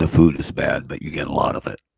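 put-on deep voice. Retelling a debate about a last meal at Denny's, quoting Tim's great big deep voice. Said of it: "who had a great big deep voice".

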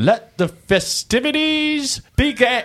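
very high, loud, festive shout. Narrating a scene where a character addresses the cheering crowd: shouting above the crowd. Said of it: "And above the crowd, he shouts".

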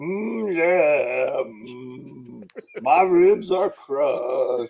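every word dragged out very slowly, complaining. Retelling a childhood game with a brother: Koko B. Ware impression. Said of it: "I did my best Koko impression".

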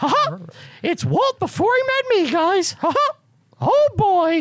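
very high-pitched and slow. Joking with friends about an old movie: Mickey Mouse voice. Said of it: "You do a pretty good Mickey".

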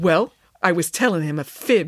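ordinary delivery

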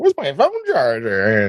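lively, animated, swooping up-and-down sing-song delivery. Retelling what Abby said on coming in: imitating Abby. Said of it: "Abby came in and was like".

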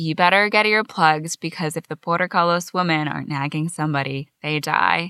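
ordinary talk

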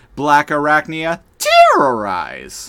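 very loud near-squeal on the start of "terrorize". Describing how she says the word, the speaker imitates her squealing the start of 'terrorize'. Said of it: "she kind of almost squeals at the beginning of saying the word terrorize".

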